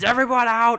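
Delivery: fierce, aggressive shout, very high and loud. Game master voices a griffin below shouting up toward the balcony: aggressive shouting griffin. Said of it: "a very aggressive voice from the bottom, he kind of shouts upward".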